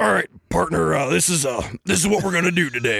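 imitated deep, gravelly man's voice. Impersonating a man who always called people partner, deep, raspy impression. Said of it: "he had this like deep, raspy voice ... every time I impersonate him, this is how I do it".

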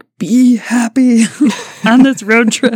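forced through clenched teeth. Illustrating a parent on a road trip telling the kids to be happy, through clenched teeth. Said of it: "like through clenched teeth".

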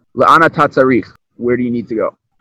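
normal talking voice

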